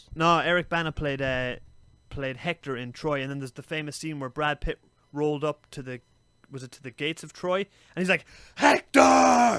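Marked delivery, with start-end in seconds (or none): 8.6-9.6 angry shout, higher and louder. Retelling a film scene where Achilles calls at the gates: imitating Brad Pitt shouting. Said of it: "shouting it for, like, five minutes".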